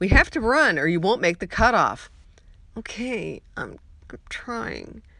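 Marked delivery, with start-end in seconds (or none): 2.8-5.0 put-on very soft, tired, small childlike whine. On a trail in darkness, answer Amelia's urging to run in a very small, weary, whiny-child voice. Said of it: "My voice sounded very small and weary, like a whiny child".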